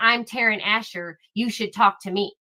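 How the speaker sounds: put-on unfriendly voice. Mocking how a reporter talks to people: imitating Taryn Asher. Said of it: "throwing her name out there and saying".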